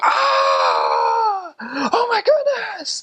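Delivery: put-on very high, very slow swooping scream. Retelling a bike accident, the hurt man behind them: imitating a man screaming. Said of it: "he's screaming back there".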